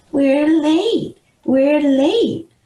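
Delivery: very high, mocking voice. Reading a story where one character mocks Amy's plea: mocking Amy's high-pitched voice. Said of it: "imitating her high-pitched voice".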